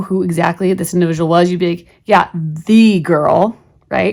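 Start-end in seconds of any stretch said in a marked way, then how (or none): 2.0-3.6 slow, loud stress on the word "the". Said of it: "this would be a girl that you should know".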